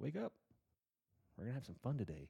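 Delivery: acted, cheerful, bright sing-song delivery. Retelling waking everyone in the house super early, mock-cheerful wake-up call. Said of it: "will wake up super early in the fucking morning and say".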